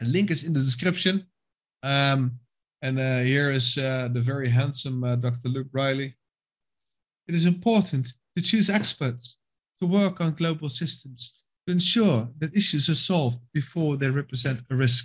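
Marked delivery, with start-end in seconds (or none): 7.3-15.1 terrible, put-on English accent. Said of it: "My English accent is terrible today".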